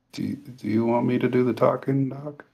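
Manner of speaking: quiet mutter under the breath. A tabletop player's character offers to take over the talking: muttered under his breath. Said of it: "Logan's gonna say under his breath".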